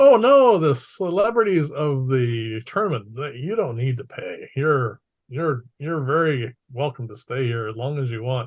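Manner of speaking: very loud, put-on, wooden, hammy stage delivery. Retelling what the proprietor Artha said when they went to pay, loud bad acting voice. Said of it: "in a very loud voice and very poor acting voice".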